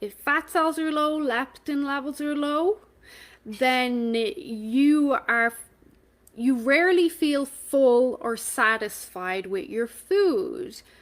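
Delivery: measured, step-by-step pace. Speaker slows down so people connect the dots, speaking slower. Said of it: "I'm saying this a bit slower".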